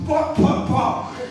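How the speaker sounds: mock loud, unvoiced booming "pá" like a bass.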